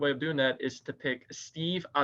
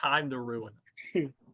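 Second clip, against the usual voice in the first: plain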